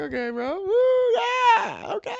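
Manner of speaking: mock very high, very loud excited whoops. Speaker retells a coworker's reaction to going to Best Buy, imitating excited cheering. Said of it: "he's like jumping up and down".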